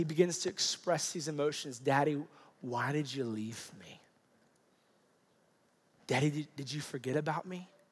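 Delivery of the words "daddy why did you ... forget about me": soft, breathless, tearful whisper. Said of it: "through his tears and his fear".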